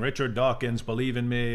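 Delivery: plain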